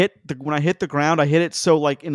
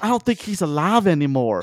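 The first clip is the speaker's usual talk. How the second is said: put-on strong rural West Virginia accent; 3 semitones higher than usual. Retelling what a man kneeling in the snow said: imitating a West Virginia accent. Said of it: "such a West Virginia accent".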